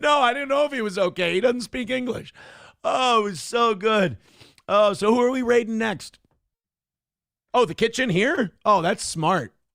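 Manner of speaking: mock loud talking. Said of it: "start talking loudly".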